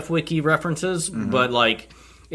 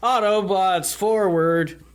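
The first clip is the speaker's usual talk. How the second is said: pitched-up, intentionally weird, shoddy, deliberately bad reading; 5 semitones higher than usual. Rallying the party against the Decepticons, in a deliberately bad delivery. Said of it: "I said it in a weird way... I was trying to make it sound shitty".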